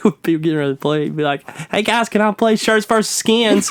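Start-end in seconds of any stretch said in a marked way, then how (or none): 1.7-3.7 real squeaky, piping, high little voice. Retelling what a guy said as they got ready to play, high-pitched squeaky voice impression. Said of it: "he had like this real high pitched".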